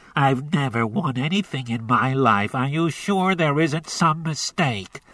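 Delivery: nasal speaking voice, talking through the nose. Reading a story aloud, voicing a caller told he won a prize: speaking nasally. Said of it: "he said nasally".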